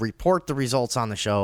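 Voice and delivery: ordinary talk, nothing marked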